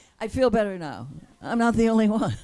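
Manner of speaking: high-pitched, relieved, laughing through the words. Hearing the other person also did this, the speaker answers laughing.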